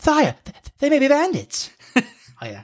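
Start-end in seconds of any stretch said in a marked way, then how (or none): 0.0-1.7 swooping, very high British voice with lisped s. Quoting a character from an old version, british voice with a lisp. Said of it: "he had like a bit of a lisp".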